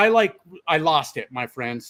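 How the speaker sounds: ordinary delivery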